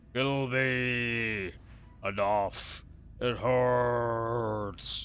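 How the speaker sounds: low croak through clenched teeth, "me" stretched. As a suffering troll in a storyteller's scene, croaking through clenched teeth. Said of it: "The troll croaks through clenched teeth".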